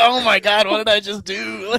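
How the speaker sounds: loud, slow, drawn-out, stunned, reeling disbelief. Retelling a wrestling match, imitating Shawn Michaels in the corner: imitating Shawn Michaels in shock. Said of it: "And then Sean's in the corner like".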